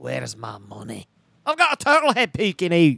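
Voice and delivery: put-on Scottish accent. Asked to do a childhood impression, doing Fat Bastard's Scottish accent. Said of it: "That was pretty good Scottish accent".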